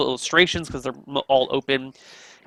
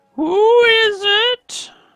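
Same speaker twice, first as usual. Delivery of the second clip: put-on very high-pitched, loud elderly voice, called out; 6 dB louder than usual. Someone behind a door answers a knock, in an old voice. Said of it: "You hear this old voice".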